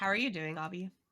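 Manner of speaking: put-on low-energy voice. Greeting a co-host by name, imitating Bobby's low energy. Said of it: "Stop trying to imitate my low energy".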